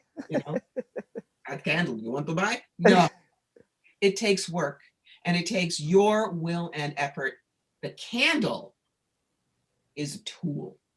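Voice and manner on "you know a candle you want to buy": fast, bad, put-on Russian accent. Mocking someone who sells a candle as the fix, in a bad russian accent. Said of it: "in a bad Russian accent".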